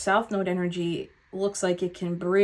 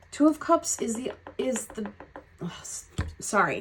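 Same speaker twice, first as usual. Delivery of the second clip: excited stutter, stammering, pitched up; 3 semitones higher than usual. Reading a tarot spread for Pisces, stuttering with excitement. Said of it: "Now I'm stuttering because I'm excited".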